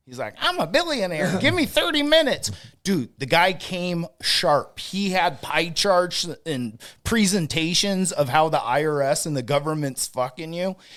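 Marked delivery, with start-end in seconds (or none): 0.5-2.6 very high-pitched voice. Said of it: "And he talked like this".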